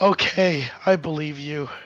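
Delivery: resigned, sighing delivery. Voicing Cutter, who gives in to the other player: sighing. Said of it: "Cutter sighs and says".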